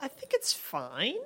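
upward pitch at the end. Answering a question about the show, with rising question intonation. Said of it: "I say with like a up question voice".

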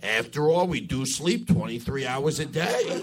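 slow, lazy, drawn-out salesman character voice.

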